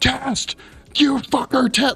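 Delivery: put-on rage, high pitch. Acting out testing the microphone as someone walks by, retelling getting enraged. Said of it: "Like I was getting enraged".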